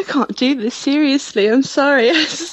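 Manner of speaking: laughing through words. Asked to answer a question seriously, laughing while talking. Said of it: "I'll start laughing".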